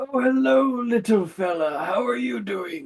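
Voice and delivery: put-on gentle old man voice. Voicing a nice calm old man greeting a visitor: calm old man voice. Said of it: "Nice, calm, old man".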